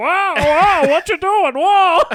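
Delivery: very high yell at full blast, very loud. Retelling a movie scene, imitating Frank Oz. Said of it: "Frank Oz, like, eighty yard over it being like".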